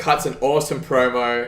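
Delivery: ordinary delivery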